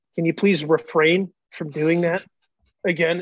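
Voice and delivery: gentle, kind, polite tone. Retelling a man's request to the speaker, imitating how nicely he said it. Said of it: "he just said it so nice".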